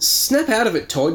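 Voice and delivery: firm, commanding tone, pitched very high. Narrator reading the second-person hero shaking Todd by the shoulders, ordering. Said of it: "you order him".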